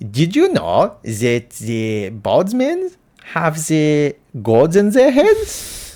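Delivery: put-on German accent, slow and swooping. Doing a bit when asked for the accent, put-on German accent. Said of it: "the German accent".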